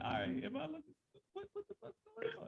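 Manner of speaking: very high, bewildered mock voice. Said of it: "And I'm like".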